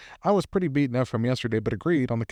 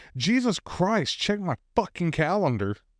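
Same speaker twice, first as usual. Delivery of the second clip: frustrated yelling outburst, pitched up; 6 semitones higher than usual. Recounting a work meeting, thinking they were on mute, retelling a frustrated yell. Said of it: "I yell in pure frustration".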